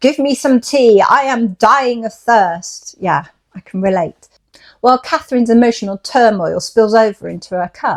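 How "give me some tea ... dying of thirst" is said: deliberate, savoured, slow and drawn-out delivery. Quoting Linton's line from Wuthering Heights, in a loud voice. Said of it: "I always want to do this in a loud voice".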